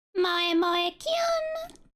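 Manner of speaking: voice breaking into high cry, "Kyun" drawn out. Saying a cute catchphrase aloud: voice cracking. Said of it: "I know my voice cracked there".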